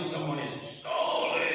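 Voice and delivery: ordinary talk, nothing marked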